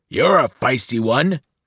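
deep bellowing voice. Reading a story aloud, the monster below the ledge bellows in a deep voice. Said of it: "the deep voice bellowed".

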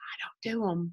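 hushed, very quiet whisper. Recalling a moment with a team member, whispering. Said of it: "I whispered to her".

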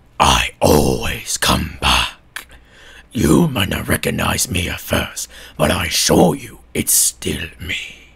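very low, rough, grinding rasp throughout. Retrying the figure's line to do it better: better Springtrap voice. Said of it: "I could do this way better".

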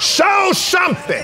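loud, fervent shout in a preacher-like style.

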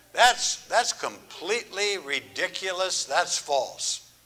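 ordinary talk, nothing marked

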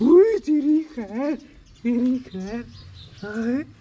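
high, startled yelp.

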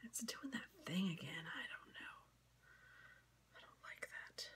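whispered, barely voiced, very quiet. Painting nails and muttering to oneself: whispering. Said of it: "Sorry, I whispered that".

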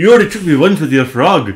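loud, botched, put-on Scottish accent. Quoting the elf girl character from the show: bad Scottish accent as Rayla. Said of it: "That's not like Scottish accent at all".

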